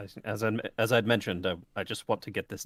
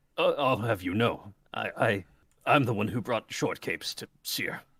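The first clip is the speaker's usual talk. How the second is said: words forced out with choking and gagging. Voicing Quintus, who is choking and trying not to vomit: choking, holding back vomit. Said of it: "as he's choking, trying not to".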